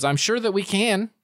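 speaking through a chuckle. Voicing a figure who answers a lost stranger: chuckling while speaking. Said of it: "he chuckles and says".

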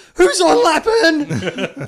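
very loud, very high, shrill, swooping anguished yell. Retelling a football fan yelling at the game: imitating a desperate anguished yell. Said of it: "this Essendon fan yells out".

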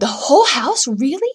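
very loud, high-pitched gasped words. Told he gets the haunted house for one night's stay, he gasps. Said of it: "Jack gasped".

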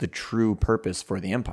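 normal talking voice

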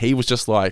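ordinary talk

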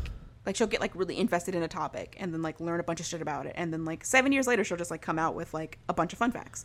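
ordinary delivery

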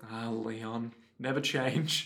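low affectionate put-on sigh.

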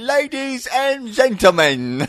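put-on Cockney accent. Recalling a film scene, imitating Tom Hanks: Tom Hanks Cockney accent. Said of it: "Tom Hanks giving, like, a Cockney accent".

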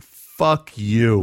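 ordinary talk

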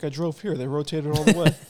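dry, sarcastic delivery. Retelling a guy's answer when asked about rotating his tires: imitating a sarcastic reply. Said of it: "it's sarcastic".

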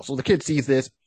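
usual speaking voice

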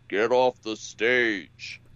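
really deep, slow, rumbling bass voice. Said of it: "that really, really deep rumbling voice".

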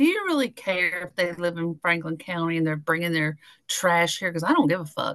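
ordinary talk, nothing marked

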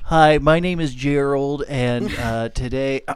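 loud, slow, drawn-out delivery. Imitating a twelve-year-old kid with a bad mic starting his video: imitating a twelve-year-old YouTuber. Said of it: "some twelve-year-old kid with a shitty mic".

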